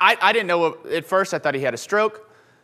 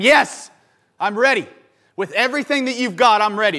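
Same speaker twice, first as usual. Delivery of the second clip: put-on, all-out scream; 2 semitones higher than usual. Saying how listeners will answer the repeated question: acting out screaming. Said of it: "till you're screaming at him".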